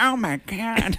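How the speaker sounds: alarmed tone, pitched very high. Retelling a scene where she can't see in a snowstorm: Vanessa Hudgens impression. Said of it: "That's a good impression of Vanessa Hudgens".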